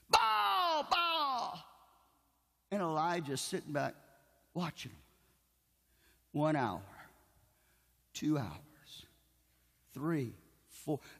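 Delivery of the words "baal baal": put-on very high, stretched-out screaming cries. Telling the story of Elijah, acting out the crowd calling on Baal: imitating people screaming. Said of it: "And they start screaming".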